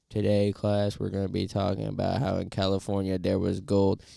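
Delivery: flat, droning, textbook monotone. Speaker imitating a history teacher reading straight from the textbook: monotone. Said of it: "if they're just speaking monotone".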